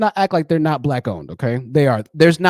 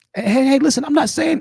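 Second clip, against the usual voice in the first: strained voice cracking, higher; 11 semitones higher than usual. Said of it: "Rest your voice, man".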